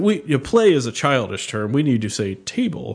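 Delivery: ordinary delivery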